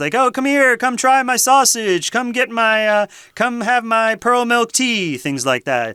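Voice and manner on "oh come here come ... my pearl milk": loud, high street vendor hawking call. Showing how a night market vendor calls out to sell: imitating a loud street vendor. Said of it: "they might be being loud, trying to sell their things".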